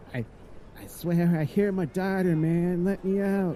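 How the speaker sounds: small voice, kept tiny. Game master voicing someone inside a leather satchel, small voice. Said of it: "heard a small voice come from".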